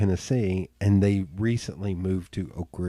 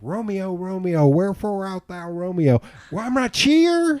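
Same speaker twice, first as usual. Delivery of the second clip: horrible, very high, hammed-up put-on Southern voice; 11 semitones higher than usual. Doing a horrible impersonation of a comedy album Romeo bit: horrible Andy Griffith impersonation. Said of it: "I'm gonna do a horrible impersonation where he goes".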